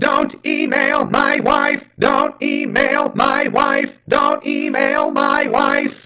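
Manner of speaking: shrill robot shriek at full volume. After talk of reading a thing in character, answer in a silly Dalek voice. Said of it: "Don't email that Dalek's wife".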